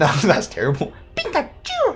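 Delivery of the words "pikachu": very high-pitched squealing voice. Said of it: "I gotta give it a Pikachu voice".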